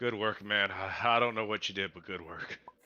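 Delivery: soft, relieved sigh, exhaling the words. Thanking a companion in character after danger passes: sighing with relief. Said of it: "I'm just gonna sigh, uh, of relief".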